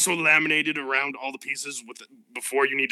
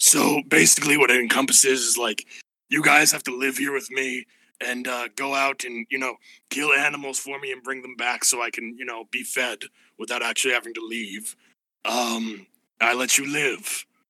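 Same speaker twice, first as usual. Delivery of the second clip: giant, big cave dragon voice. Narrator voices a giant blue dragon reading conditions from a folder, giant blue dragon voice. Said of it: "and now there's a dragon, giant blue dragon that came out of the cave, / He pulls out little spectacles that he puts on the bridge of his nose. / I will spare your lives on one of three conditions. On".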